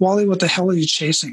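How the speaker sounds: ordinary talk, nothing marked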